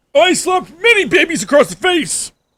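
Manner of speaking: put-on very high, angry, cranky old man voice. Playing an old man yelling at a kid: angry old man voice. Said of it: "That's more like old man".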